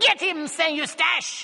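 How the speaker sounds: very high, clear, commanding tone. Narrator reading a man's command to his dog, in a high, clear voice. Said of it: "in a high, clear voice".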